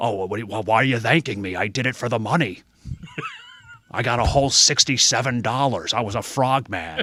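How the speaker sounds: animated, played-up delivery with wide, swooping pitch. Retelling the governor answering a fan's thanks: Jesse Ventura impression. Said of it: "Such a good impersonation".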